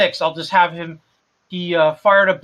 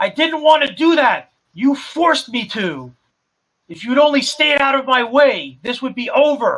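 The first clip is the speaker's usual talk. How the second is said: high, angry shouted yell; 7 semitones higher than usual. A game narrator voices Lighthouse after the flash blinds Protector, yelling. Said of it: "you hear Lighthouse yell".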